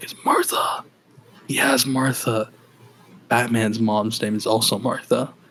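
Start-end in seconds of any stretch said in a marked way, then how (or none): 0.0-0.8 put-on choking voice, quieter. Retelling a movie fight scene, quoting Superman: imitating choking Superman. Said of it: "is choking. He's like".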